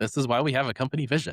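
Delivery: mock, lightly sarcastic tone. Imitating leaders who hear this advice, said sarcastically. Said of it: "I say that somewhat sarcastically".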